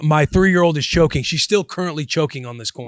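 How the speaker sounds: usual speaking voice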